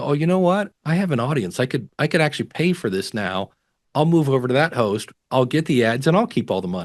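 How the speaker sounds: ordinary talk, nothing marked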